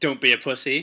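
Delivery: loud, barking shout. Retelling the coach's reaction to a full body cramp: imitating a coach shouting. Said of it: "basically shouting at me, like".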